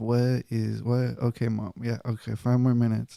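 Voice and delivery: put-on groggy, drowsy, half-asleep, barely awake voice. Retelling answering mom in the morning, imitating own half-asleep self. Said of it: "And I'm like half asleep".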